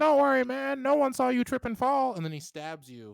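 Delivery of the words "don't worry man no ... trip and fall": very high, very loud, shrill, raspy kobold voice. Voicing a kobold that stabs Belle: kobold voice. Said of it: "he runs up and he was like".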